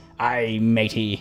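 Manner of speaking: put-on pirate voice. Reading out a pirate joke from chat: pirate voice. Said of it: "I wish I had more of a pirate voice".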